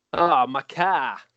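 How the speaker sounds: plain conversational Boston accent. Showing how a Boston speaker says a word: Boston accent. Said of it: "a guy from Boston says".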